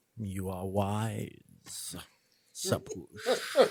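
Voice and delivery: hushed, soft, murmured cat voice. Voicing a cat that tilts its head at a player: Admiral Purrington cat voice. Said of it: "Admiral Purrington lays down".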